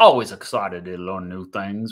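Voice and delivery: low, failed, fake Australian accent. Reading a viewer's comment aloud, in a bad Australian accent. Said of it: "I got to do this in an Australian accent".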